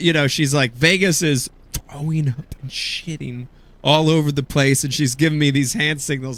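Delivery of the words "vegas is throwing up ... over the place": normal talking voice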